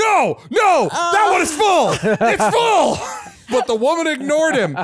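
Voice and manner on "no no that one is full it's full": high, loud frantic yelling. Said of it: "he started yelling".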